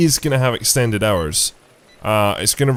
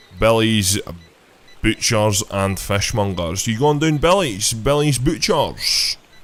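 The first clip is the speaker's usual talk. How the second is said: very thick, broad Scottish accent. Saying a shop's name and a customer's line; really, really Scottish accent. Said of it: "let's put it in a really, really Scottish accent".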